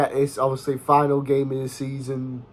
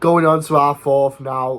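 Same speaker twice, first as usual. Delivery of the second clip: normal talking voice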